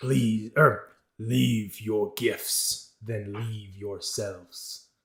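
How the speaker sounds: grand, slow, drawn-out creature voice. Voicing a creature seated on a central pedestal, in a booming creature voice. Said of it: "as you hear this booming voice".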